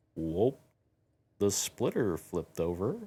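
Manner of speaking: very slow, drawn-out, snail-paced delivery. Retelling a vehicle hitting a rock, acting out someone's remark, retelling a very slow remark. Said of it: "says in the slowest voice possible".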